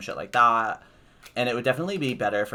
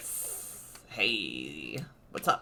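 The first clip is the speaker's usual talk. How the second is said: drawn-out, slow whispered lizard creature voice; 5 semitones lower, 8 dB quieter than usual. Imitating how Komodo Mo and Komodo Joe sound: lizard voice. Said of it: "That's my imitation of them".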